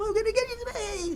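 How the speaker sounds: pitch creeping up to very high. Retelling a TGI Fridays waiter in a referee shirt, imitating a voice rising higher. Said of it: "His voice just kept getting higher".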